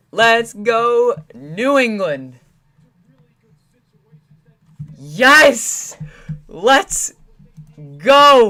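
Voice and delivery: voice cracking with excitement. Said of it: "ignore the voice crack".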